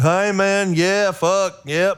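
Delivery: slow, goofy country drawl. Showing one of three voices the speaker uses: dumb country voice. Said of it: "I have this dumb like country voice, like".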